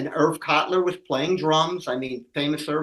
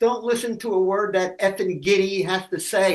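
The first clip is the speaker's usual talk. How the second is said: play-acted, shouty, mild yell; 5 semitones higher than usual. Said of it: "they're yelling at each other".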